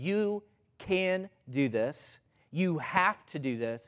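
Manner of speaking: slow, hard, in-your-face, pushy delivery. Retelling how a trainer pushed people, imitating Jillian yelling at them. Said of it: "like yelling at them".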